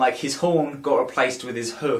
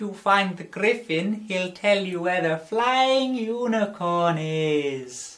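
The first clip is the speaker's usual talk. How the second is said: slow, drawn-out, pitched-up dream voice; 6 semitones higher than usual. Retelling a dream, imitating a dream voice in head. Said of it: "That's the best impression I can do of what the voice sounded like".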